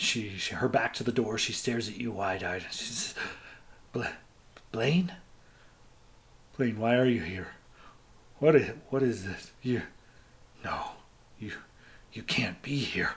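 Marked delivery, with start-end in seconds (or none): 4.7-13.1 terrified, stammering, stumbling voice. As a frightened woman in the game, confronting the player's character, terrified. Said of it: "she looks terrified".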